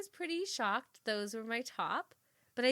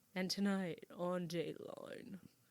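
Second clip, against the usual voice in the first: slow, breathy TV narration voice; 5 semitones lower, 8 dB quieter than usual. Trying to do the Dateline host's voice: Keith Morrison voice. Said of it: "I'm trying to do his voice".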